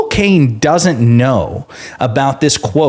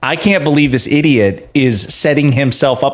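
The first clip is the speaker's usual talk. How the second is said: plain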